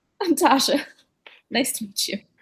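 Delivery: talking through laughter mid-sentence. Giving a character's name in a role-play scene, laughing while talking. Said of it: "I'm sorry, I'm laughing".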